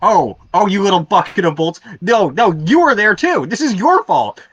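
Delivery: high, furious, angry screaming. Player voices Spruce as he walks up to Stavo, screaming angrily. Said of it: "starts screaming at him".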